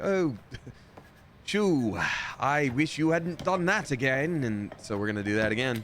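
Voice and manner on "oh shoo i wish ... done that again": very polite British voice, slow, anger seeping through. Retelling what a house owner in the game keeps saying: imitating a polite, angry British man. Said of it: "very polite and British, but clearly getting more and more angry".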